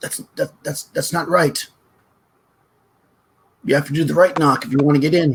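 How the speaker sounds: tiny, small, high-pitched little voice. Narrator voices someone behind a door answering a knock: small voice. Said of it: "a small voice".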